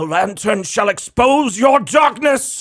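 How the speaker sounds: very high, loud, shrieking scream. Narrating a game scene, the player's father's voice screams out at them, screaming. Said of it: "you hear your dad's voice scream out at you".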